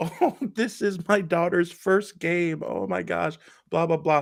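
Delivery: acted tearful weeping, high, sobbing gush. Retelling how a mom reacted when her daughter got a caught ball: imitating someone sobbing. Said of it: "the mom starts sobbing, like openly weeping".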